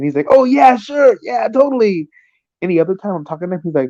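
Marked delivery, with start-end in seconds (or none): 0.3-2.1 acted very high, gushing, eager, drawn-out enthusiasm. Imitating an acquaintance accepting a beer: imitating enthusiastic agreement. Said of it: "he ever has enthusiasm in his voice".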